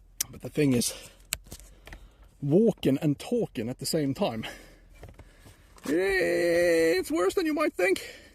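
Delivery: loud, breathless, panting speech, puffing between words. Walking and talking at the same time, apologizing for it, out of breath and panting. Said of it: "Sorry for all the panting".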